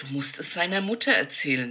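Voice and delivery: ordinary talk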